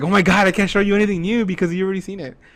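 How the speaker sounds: high, loud angry complaining voice. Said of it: "But she gets angry".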